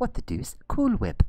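shrill, very high, loud cartoon voice. The speaker shows off a Stewie Griffin voice from Family Guy. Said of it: "That's my impersonation of Stewie and Family Guy".

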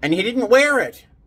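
high, loud yelling.

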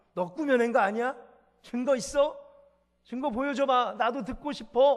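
demanding, challenging tone.

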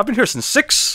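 very high, rising jump in pitch on "six". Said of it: "he went really up for the six".

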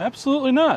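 sarcastic, high-pitched tone. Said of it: "That's sarcasm".

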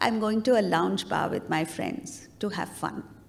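embarrassed, sheepish delivery. Retelling a story of two old friends meeting: imitating a sheepish reply. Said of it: "very sheepishly".

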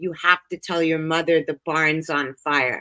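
put-on stern man's voice. A speaker recalls a voice heard in their head as a small child, retelling a stern man's voice. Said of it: "a man's voice came into my head that was very stern".

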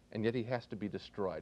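ordinary talk, nothing marked

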